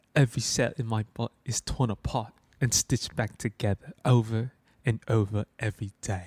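put-on gentle British accent. Asked whether they can do a good Ava, quoting her: soft British Ava accent. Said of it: "Can you do a good Ava?".

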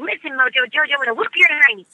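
put-on cartoon character voice. Describing how cartoon characters talk, doing a Buttercup voice. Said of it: "she sort of talks like this. Says things like".

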